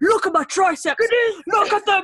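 male voice.

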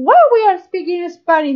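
excited chatter, squealed out high.

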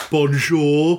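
broad Brummy "bonjour" with a rising tone.

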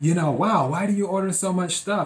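teasing, joking delivery with laughter running through it. Retelling what the delivery guy jokingly asked: imitating someone laughing while talking. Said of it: "he said with a laugh".

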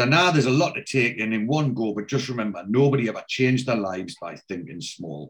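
ordinary delivery

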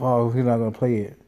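ordinary delivery

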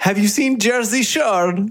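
very high-pitched put-on Eastern European accent. Retelling what a German man in his tent asked: Borat accent. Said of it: "It's my best Borat accent".

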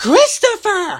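delighted exclamation, very high. Matthew reacts to christopher saying there is a lady, with a delighted exclamation. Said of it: "Matthew exclaimed, delighted".

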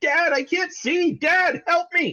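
mock, very high, frightened, panicked toddler cries. A father retells his toddler calling for him, imitating a panicked child. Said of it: "he sounds panicked and he's like".

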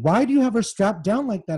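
mock insistent, high, demanding tone. A mother confronts the men strapping her daughter into a gurney, demanding. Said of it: "I demanded".

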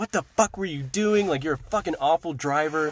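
mock-furious, acted angry, tearing into someone. Retelling what they were going to say to the driver; retelling an angry outburst. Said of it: "I was really mad, and I was going to tear her apart and be like".

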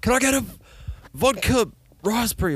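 put-on yelling. Acting out ordering a drink at a loud club: imitating yelling an order. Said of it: "you gotta yell at them".

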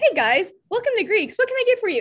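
peppy, energetic server voice, very high. Showing how they greet a table as a server, high, energetic server voice. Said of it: "I have a server voice and I talk so high".

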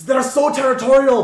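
put-on very loud, very high exclamation in Scottish accent. Narrating a game, voicing the captain meant to be australian: accidental scottish accent. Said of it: "that was Scottish".

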